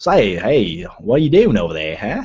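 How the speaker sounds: clumsy, poorly done put-on Australian accent. Speaker tries the accent they'd need to learn for Australia: bad Australian accent. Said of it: "my Australian accent's a little bit shitty".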